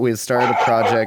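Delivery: normal talking voice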